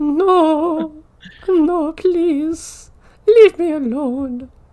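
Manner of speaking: put-on very high, loud, pitiful old man pleading voice. Doing an obscure comedy bit: pitiful old man voice. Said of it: "Sounds like a pitiful old man".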